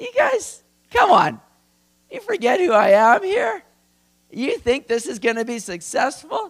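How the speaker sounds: very high, loud, amused mocking voice. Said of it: "God's just laughing, going".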